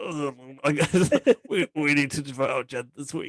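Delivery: mock quiet, held-back, unprojected throaty voice. Describing a man's voice when he tries not to be heard, imitating his unprojected throat voice. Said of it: "very particular talking game voice when he's trying not to be heard".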